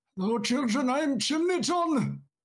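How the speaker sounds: very high-pitched Welsh accent. Joking about a stand-in Christmas figure, voicing Chimney John in a Welsh accent. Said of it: "Can I do a Welsh accent?".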